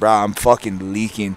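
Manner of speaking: furious, angry, pissed-off outburst. Telling a story about cutting own hand on a guy, retelling own angry outburst. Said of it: "I just was pissed".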